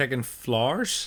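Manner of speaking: put-on Irish accent. Comparing how a phrase sounds in different accents, speaker says it in Irish accent. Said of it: "Say it in an Irish accent".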